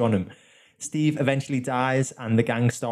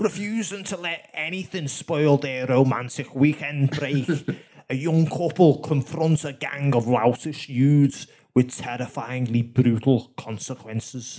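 put-on Scouse Liverpool accent; 2 semitones higher than usual. Trying out voices on a film blurb, reading it in a Scouse accent. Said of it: "I'll just do a Scouse one".

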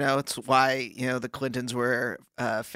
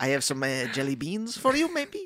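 fake French accent, swooping pitch. Playing a French army doctor introducing himself: put-on French accent. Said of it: "You just sound like French Reagan".

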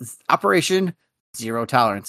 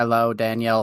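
robotic machine-like voice, quieter; 3 semitones lower, 4 dB quieter than usual. Greeting the host after being introduced on the show: robotic-sounding greeting. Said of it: "somewhat robotic for a second there".

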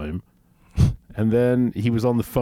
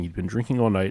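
ordinary talk

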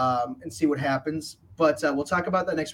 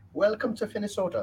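put-on Irish accent, pitched up; 6 semitones higher than usual. A host welcomes Jacob to Finnesota, in an Irish accent. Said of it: "why'd you say that like you're Irish?".

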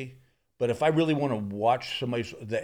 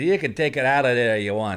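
horrible put-on Irish accent, raised voice; 6 dB louder than usual. Retelling what the golf caddy said after a tee shot, in a horrible irish accent. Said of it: "I do a horrible Irish accent".

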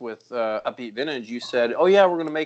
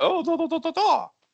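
very high-pitched nonsense babble. Retelling what someone said after a throw: Ilya impression. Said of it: "That That's the best Ilya impression ever".

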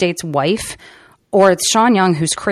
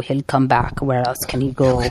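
put-on Russian accent, lower; 5 semitones lower than usual. Retelling a film scene, quoting the main Russian guy: Russian accent. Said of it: "Good Russian accent".

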